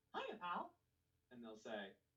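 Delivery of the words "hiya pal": very high-pitched cartoon mouse voice. Doing the voice when people ask to hear it: Mickey Mouse voice. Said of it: "I'll do the voice for them".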